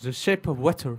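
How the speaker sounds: stronger English accent. Redoing a film title, trying it again with a bit more english accent. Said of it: "avec un petit peu plus d'accent anglais".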